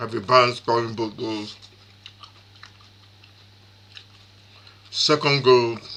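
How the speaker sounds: speaking with mouth full. Recapping a football match, the speaker eats while talking: talking while chewing. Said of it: "apologies for me chewing".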